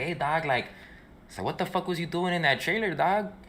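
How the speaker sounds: high-pitched Los Angeles street-style voice.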